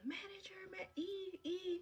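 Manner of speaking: acted, shrill, very high, long-held drawn-out scream. Retelling how a coworker screamed for the manager: imitating someone screaming a name. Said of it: "started screaming the manager's name".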